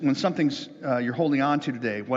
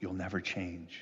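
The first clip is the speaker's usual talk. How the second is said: barely audible, low, very quiet hushed half-whisper; 6 semitones lower, 12 dB quieter than usual. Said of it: "Something whispers".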